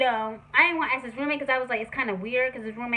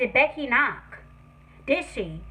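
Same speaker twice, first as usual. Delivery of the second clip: usual speaking voice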